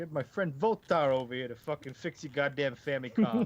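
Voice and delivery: bad small-time mobster voice with New York accent. Voicing a low-level gang mobster character, bad new york mobster accent. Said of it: "New York accent".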